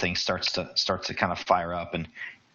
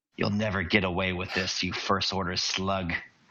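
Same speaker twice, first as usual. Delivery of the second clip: cold, hard, steel-edged voice. Narrating a game scene, voicing an unseen character's line in a steely voice. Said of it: "you hear a steely voice saying".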